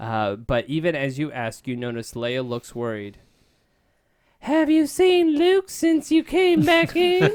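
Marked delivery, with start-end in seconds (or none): 4.4-7.2 put-on very high, loud Southern belle accent. Reading Princess Leia's worried question aloud: Southern belle voice for Leia. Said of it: "the little antebellum".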